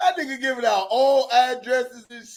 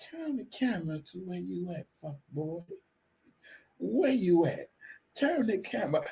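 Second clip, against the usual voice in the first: low, sultry, seductive put-on voice; 6 semitones lower, 10 dB quieter than usual. Retelling what a woman said on a call: imitating a sexy voice. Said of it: "she put the sexy voice on".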